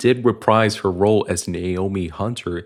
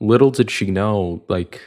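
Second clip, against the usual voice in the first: ordinary talk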